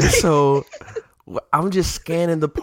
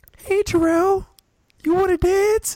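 put-on very high girl's voice. Retelling how a girl at a party asked him to dance, imitating her. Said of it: "I'm gonna say it like her".

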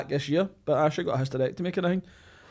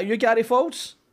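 put-on high, young Irish boy's voice with Irish accent; 7 semitones higher than usual. Retelling a soldier's question at a camp gate: imitating a wee irish boy. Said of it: "A wee Irish boy's like".

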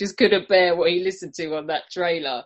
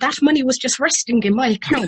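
put-on Irish accent, pitched up; 6 semitones higher than usual. Reluctantly saying a Father Ted line when asked for an Irish accent: Irish accent. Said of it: "You just say anything in an Irish accent".

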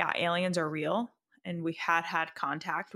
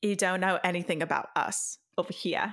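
put-on Australian accent. Voicing the police department's reply to americans, in an australian accent. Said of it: "so I sound Australian".

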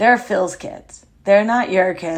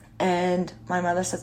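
ordinary talk

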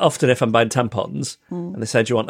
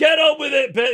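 put-on high, boozy, drunken yell. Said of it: "drunk men just yelling out things like".

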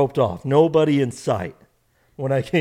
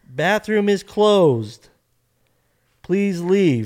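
put-on lady voice, mild, high-pitched calling out; 5 semitones higher than usual. Retelling being told to leave a restroom: imitating a lady yelling. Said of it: "I hear a lady yelling".

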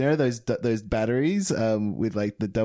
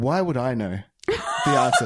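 put-on aggressive voice. Retelling a customer's reply at the video store: imitating an aggressive customer. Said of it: "very, like, aggressive".

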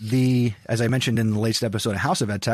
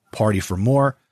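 usual speaking voice

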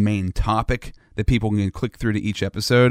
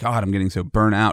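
ordinary delivery

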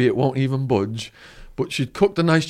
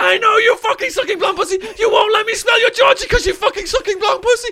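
put-on woman's scream, higher; 3 dB louder than usual. Retelling how a woman with a knife chased him: imitating a woman screaming. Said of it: "this crazy woman with a Ginsu knife screaming".

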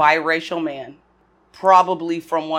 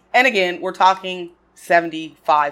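normal talking voice

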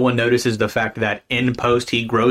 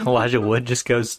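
ordinary talk

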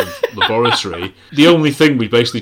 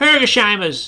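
put-on very high, annoying know-it-all child voice; 12 semitones higher than usual. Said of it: "the voice".

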